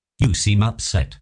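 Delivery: ordinary delivery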